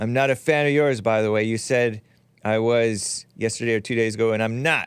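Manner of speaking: plain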